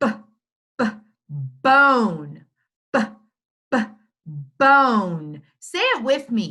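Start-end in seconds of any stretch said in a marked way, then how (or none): 0.0-5.4 b split off, bone drawn out very slowly. Showing learners how to sound out a word: stretched-out word, sounds split. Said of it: "Let's stretch it out".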